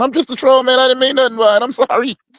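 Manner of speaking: mock sobbing, self-pitying, high and tearful. Retelling how a man on video apologized: imitating someone crying. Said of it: "started crying".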